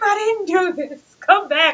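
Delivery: acted high shriek. Retelling how he screamed in the scene: imitating someone screaming. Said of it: "When he screamed".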